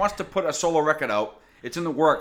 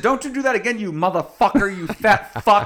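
yelling, higher and louder; 4 semitones higher, 5 dB louder than usual. Retelling yelling at a crowd surfer at a show: retelling own screaming. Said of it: "I screamed it so loud".

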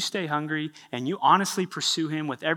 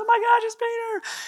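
put-on startled, freaking-out outburst, higher and louder; 4 dB louder than usual. Retelling a servant girl peeking at the door: imitating someone freaking out. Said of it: "freaks out and goes".

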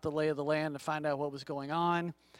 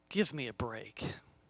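mock mumble under the breath, lower and quieter; 4 semitones lower, 5 dB quieter than usual. Recounting what a guy said under his breath, retelling a mumble under breath. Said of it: "he mumbled".

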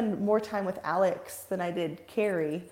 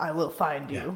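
put-on menacing movie voice, lower; 4 semitones lower than usual. Suggesting a voice for stalking someone at an event: Liam Neeson voice. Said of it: "you need the Liam, Liam Neeson, Neeson voice".

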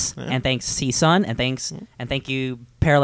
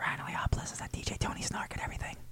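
breathy whispered delivery, very quiet. Giving social media handles at the end of an episode: whispering. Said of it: "Why'd you whisper?".

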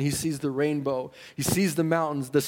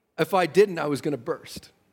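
usual speaking voice

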